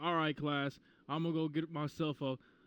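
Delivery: put-on old-fashioned New York accent. Retelling what a naval science instructor would say to the class, Stapleton's old New York accent. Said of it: "had the accent and everything".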